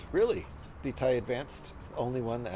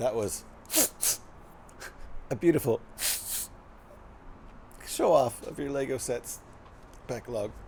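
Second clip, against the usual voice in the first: halting, tearful, joyful crying voice breaking mid-phrase. Acting out a line properly, tearful, crying with joy. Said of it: "as if you're crying tears of joy".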